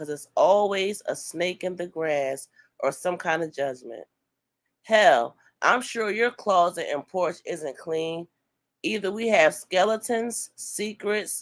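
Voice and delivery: ordinary talk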